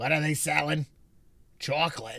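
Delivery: put-on cartoon old lady voice. Quoting a cartoon scene after a remark on another speaker's voice: SpongeBob old lady voice. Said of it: "the old lady in SpongeBob".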